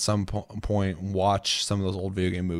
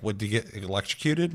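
plain

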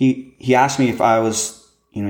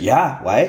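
uneasy, on-edge, wary, nervous voice; 3 semitones higher than usual. Retelling a stranger asking if he's [name], imitating his nervous self. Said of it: "kind of like, whoa, nervous".

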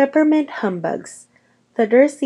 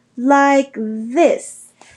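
miffed, irritable, pitched-up voice; 5 semitones higher than usual. Sir Nicholas, asked how he can be nearly headless, answers, irritably. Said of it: "he said irritably".

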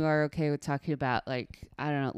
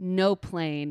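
normal talking voice

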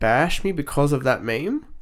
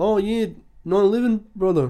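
put-on New Zealand child accent, pitched up; 8 semitones higher than usual. Imitating kids their age telling a joke, in a New Zealand accent. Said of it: "Why do I sound like a new".

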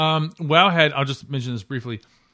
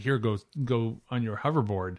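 ordinary talk, nothing marked

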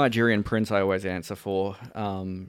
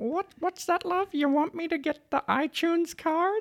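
put-on, very high old lady granny voice. Describing a man who pretends to be an old lady to scammers, in an old lady voice. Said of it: "he pretends to be an old lady".

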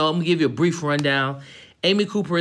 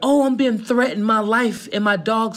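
put-on, high, distressed, whiny pleading voice; 5 semitones higher than usual. Mimicking a woman's call to the police, mock sob-story whining. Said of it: "begins this sob story".

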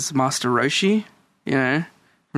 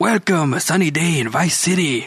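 welcoming cooking-show host persona voice; 3 semitones higher than usual. Quoting a radio host from the game: Fernando voice. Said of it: "that's exactly what I based him off".

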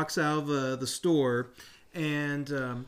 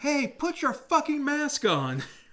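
very high, shrill yelled shout; 12 semitones higher than usual. Retelling how someone shouted at a man, retelling a shout. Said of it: "Farrah shouted at this guy".

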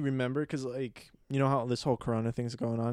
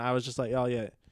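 ordinary delivery

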